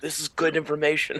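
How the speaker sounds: whispering. Whispering an aside to another character at the table: whisper. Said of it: "I'm gonna whisper to him".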